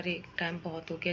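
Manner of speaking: normal talking voice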